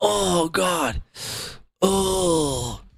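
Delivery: soft, put-on pained groan. Mocking a man who sounds like he's faking, a mock in-pain voice. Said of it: "That's a fake in pain voice".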